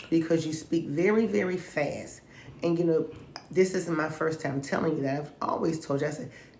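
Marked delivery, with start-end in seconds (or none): none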